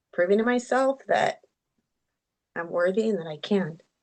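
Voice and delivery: emotional, teary, close to crying. Explaining one's personal why on a call: emotional, near tears. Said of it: "I'm trying to, not to get emotional".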